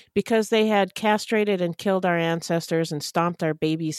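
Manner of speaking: plain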